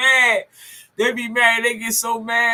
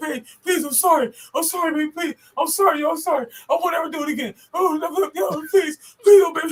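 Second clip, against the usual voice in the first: pitched-up, groveling, pleading voice; 6 semitones higher than usual. Retelling how a man on his knees used to beg her, imitating his begging. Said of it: "You on your knees begging this shit?".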